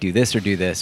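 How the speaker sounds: ordinary delivery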